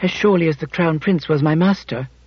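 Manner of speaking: ordinary delivery, nothing marked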